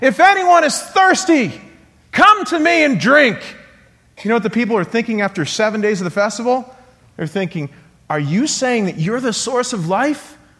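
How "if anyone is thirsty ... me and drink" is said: loud, high, undignified, unrestrained proclaiming call. A speaker retells a man standing up to address festival crowds, in a loud, undignified voice. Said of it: "said in a loud voice, undignified".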